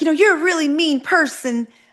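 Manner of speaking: very high-pitched, thin little voice. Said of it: "with that high pitched voice".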